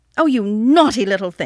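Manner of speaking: loud, cross exclamation, crying out. Reading an aunt who sees a child's discarded scarf, crying out crossly. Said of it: "she cried crossly".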